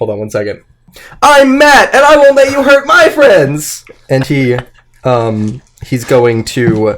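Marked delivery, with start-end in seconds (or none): 1.2-3.8 shrill, very high, loud shout. Voicing a character on the couch who defends his friends: shouting in character. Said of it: "he shouts".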